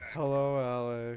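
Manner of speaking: put-on sad voice. Imitating how someone just greeted a person: imitating a sad greeting. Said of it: "you just sounded sad 'cause you went".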